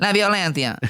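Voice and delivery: Spain Spanish accent with lisped "c". Repeating a Colombian civil war's name for another speaker: Spaniard accent. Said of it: "like a Spaniard".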